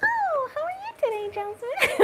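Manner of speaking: very high-pitched, affected, teasing, mocking voice. Retelling how japanese women students mock the voice, high-pitched mocking voice. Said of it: "Like this".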